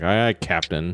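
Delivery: low, hushed, grudging cat-like grumbling. Game narrator voicing a cat answering the captain, grumbling cat sailor. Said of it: "He's just all cat grumbling".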